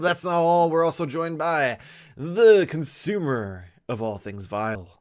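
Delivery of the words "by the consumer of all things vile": normal talking voice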